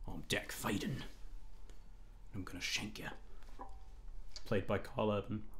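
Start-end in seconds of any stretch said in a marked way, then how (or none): 0.1-3.1 hushed, breathy, whispered Cockney accent. Joking that a planeswalker's name suits a serial killer, Dak Faden as Cockney serial killer. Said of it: "sound like a great Cockney serial killer".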